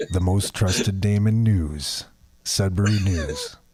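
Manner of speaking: low, slow, deep news announcer voice. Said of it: "Do your James Earl Jones voice".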